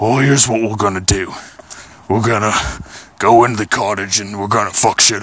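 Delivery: deep, growling bear character voice. Retelling the bear voice used while tied up in a rock: deep growling bear voice. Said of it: "Just kind of deep growling thing".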